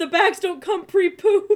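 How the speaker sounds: laughing, in a put-on voice. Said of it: "He's like".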